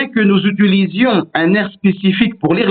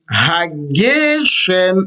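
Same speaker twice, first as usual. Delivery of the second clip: hageshem: flat ha, up on ge, down on shem. Explaining the word's mil'el stress: stress on ge in hageshem. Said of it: "ha, c'est plat, et puis ge, on monte, hageshem, et puis on redescend".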